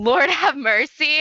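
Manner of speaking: sudden high cry. Reviewing a scene, the speaker quotes Claire lifting a blanket: imitating Claire crying out. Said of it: "she cries out".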